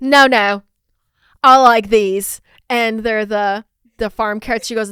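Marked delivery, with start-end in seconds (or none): 0.0-2.4 booming, loud, slow, drawn-out put-on British accent. Retelling what a woman said in an interview about her favorite carrots, the speaker mimics her in an imitated british accent. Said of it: "the first quote that I'll do is British".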